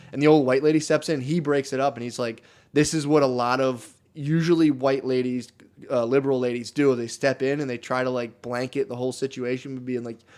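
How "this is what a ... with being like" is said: usual speaking voice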